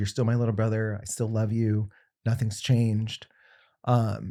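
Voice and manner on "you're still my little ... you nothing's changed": normal talking voice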